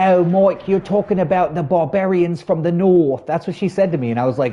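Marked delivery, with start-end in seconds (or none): 0.0-3.3 put-on high, elderly woman's posh, plummy London accent. Retelling what an elderly woman told him, imitating posh English woman. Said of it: "posh English woman from London".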